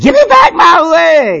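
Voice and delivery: very high, shrill, frantic, swooping acted scream. Retelling a story, the speaker acts out a woman's scream: retelling a scream. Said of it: "She starts screaming".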